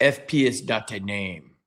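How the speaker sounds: put-on French accent, very slow and drawn out. Retelling what the customs guy in Montreal told him, in a French accent. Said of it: "the guy had a French accent and he goes".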